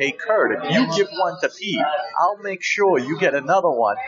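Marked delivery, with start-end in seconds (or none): none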